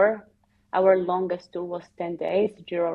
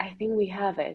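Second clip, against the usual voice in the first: mock hushed whisper, quieter; 5 dB quieter than usual. Lying on the ground, the speaker repeats what someone whispered to them, retelling a whisper. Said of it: "Beth whispered to me".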